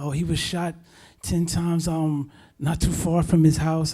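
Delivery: alarmed, panicked rambling, barely holding together. Retelling a cousin's phone call about a shooting: imitating panicked rambling. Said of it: "She's on the phone rambling and panicking".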